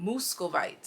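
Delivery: word said in a put-on Russian accent. Reading out the name of a selected crystal: Russian accent. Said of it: "I just read it in a Russian accent".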